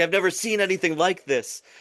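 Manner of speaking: giddy delight. Retelling how a show host reacted to a contestant: imitating Jeff sounding giddy. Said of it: "so giddy".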